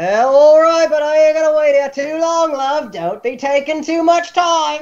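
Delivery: thin, high-pitched shout. Calling to someone who asked for a few more minutes, reedy voice shouting over din. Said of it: "a reedy voice uh, shouting over the din".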